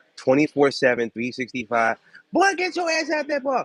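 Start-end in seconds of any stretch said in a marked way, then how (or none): 2.4-3.7 very high, loud hollering shouted yell. Describing New York neighbors calling out: imitating someone yelling out a window. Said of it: "people yelling out their windows".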